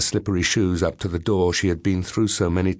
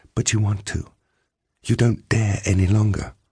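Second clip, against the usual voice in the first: whisper, much higher; 2 semitones higher than usual. A woman answers a man by speaking into his ear, whispered. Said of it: "she whispered into his ear".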